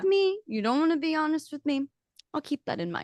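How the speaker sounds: acted tiny mob-boss voice, squeaky and very high-pitched. Acting out a man who keeps checking on them, in Zootopia mob mouse voice. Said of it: "mafia bossy of like".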